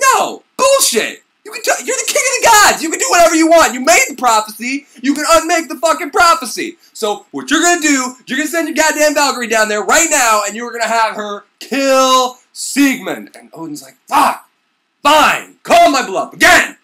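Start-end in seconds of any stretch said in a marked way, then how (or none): 0.1-13.4 mock high-pitched yelling, "kill" stretched out. Retelling a myth where Frigga confronts Odin, imitating Frigga yelling. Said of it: "she's just like yelling at him".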